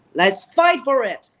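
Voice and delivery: loud, forced yell with no feeling behind. Explaining that you must feel what you say, giving an example of forced yelling. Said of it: "Or it's more yelling".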